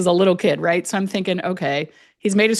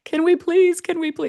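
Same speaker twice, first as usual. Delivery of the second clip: put-on very high, little kid voice, childish pleading, begging; 11 semitones higher than usual. Retelling a little kid begging a distracted parent: imitating a kid's begging voice. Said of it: "that kind of begging voice".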